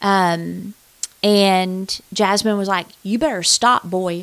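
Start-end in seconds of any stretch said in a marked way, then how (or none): 3.0-4.2 put-on sassy little girl voice. Retelling how a tied-up girl warned the attacker: imitating Jasmine's sassy warning. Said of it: "she was sassy".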